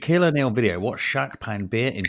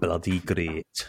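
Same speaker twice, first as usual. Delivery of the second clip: low, soft put-on Scottish accent; 4 semitones lower, 5 dB quieter than usual. Greeted by a co-host on the show, answering in a Scottish accent. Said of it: "you've gone Scottish already".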